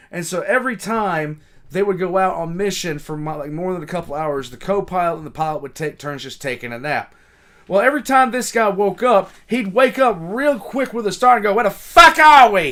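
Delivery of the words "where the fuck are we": put-on heavy Boston accent, loud and high. Retelling how a pilot woke with a start: imitating a heavy Boston accent. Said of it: "this really heavy Bostonian accent".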